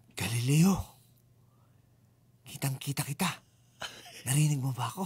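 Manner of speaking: put-on whisper. Retelling what someone said to Galileo: imitating someone whispering.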